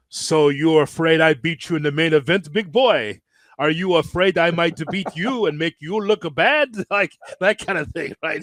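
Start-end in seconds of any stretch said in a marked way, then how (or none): 0.1-6.7 put-on strong, heavy French Canadian accent. Retelling a wrestling booking story, quoting Jacques Rougeau in a strong French Canadian accent. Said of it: "like strong accent".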